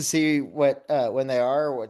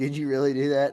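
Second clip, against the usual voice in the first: normal talking voice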